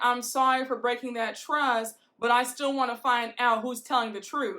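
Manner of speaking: ordinary talk, nothing marked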